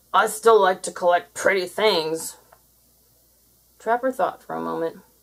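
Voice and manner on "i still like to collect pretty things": loud, grumbled, complaining delivery. The creature replies, grumbling. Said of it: "grumbled the creature".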